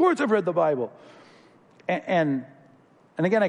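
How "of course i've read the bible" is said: affronted, offended, indignant tone. Retelling how a man in the lobby answered, imitating a loud, offended man. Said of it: "his voice is loud at this point".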